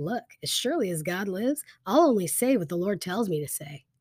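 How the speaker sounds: normal talking voice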